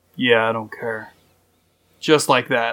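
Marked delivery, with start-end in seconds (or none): 0.2-1.1 put-on muttered voice under the breath, lower. Retelling a curt reply to a neighbor, muttered Clint Eastwood voice. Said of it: "Sound like Clint Eastwood".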